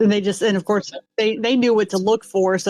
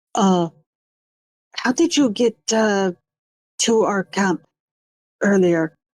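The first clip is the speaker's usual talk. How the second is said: hushed, whispered. Game master voicing a character who whispers a question to a player, whispering. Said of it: "She looks to I and whispers".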